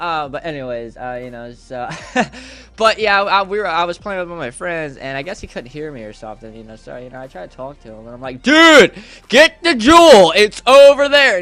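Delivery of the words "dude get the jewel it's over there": high, very loud, stretched-out yelling. Speaker retells calling out to a friend while playing Minecraft, retelling own yelling. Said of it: "dude, why are you yelling?".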